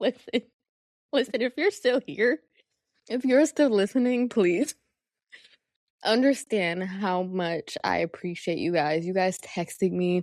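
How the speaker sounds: crying, tearful voice while talking. Thanking viewers for their support, crying while talking. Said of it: "I'm finna cry".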